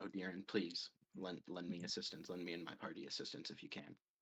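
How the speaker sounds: soft muttering under the breath. A player voicing his character's quick prayer to odirin while walking, praying under his breath. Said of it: "under his breath he's gonna say".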